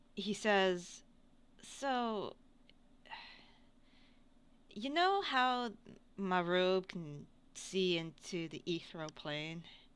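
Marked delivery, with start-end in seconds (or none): 1.6-9.6 quiet, lowered, hushed voice. Voicing a character confiding so another character won't overhear: lowered voice. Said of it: "he lowers his voice".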